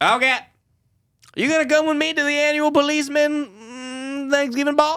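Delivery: very high cartoon kid voice, "mm" stretched out. Retelling a dad's reply to his daughter, sounding like Jimmy from South Park. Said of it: "You just sounded like a fucking Jimmy".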